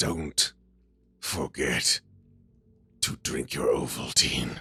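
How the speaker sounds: put-on deep dramatic voice. Answering D and D players who ask what the runes say, in a put-on deep dramatic voice. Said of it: "deep seated uh dramatic voice".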